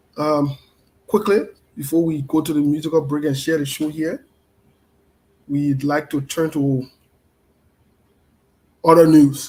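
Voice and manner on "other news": booming, loud, dramatic news-anchor voice. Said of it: "One of my good friends said he likes".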